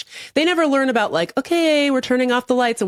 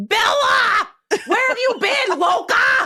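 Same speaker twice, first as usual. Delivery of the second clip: play-acted very high, slow, drawn-out scream; 14 semitones higher than usual. Imitating him out there screaming like Jacob: screaming like Jacob. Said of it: "he's out there screaming like freaking Jacob".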